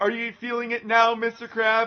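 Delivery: shouted, jeering, taunting yell. Recalling him yelling at the speaker during weights together, retelling someone yelling. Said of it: "he's yelling at me".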